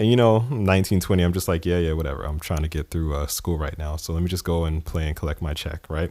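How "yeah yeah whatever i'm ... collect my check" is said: ordinary talk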